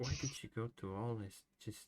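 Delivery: quiet whisper under breath. Speaking in character over an unconscious figure: whispering under breath. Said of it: "I whisper under my breath".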